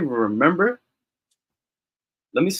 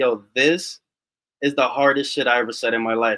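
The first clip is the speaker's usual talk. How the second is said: plain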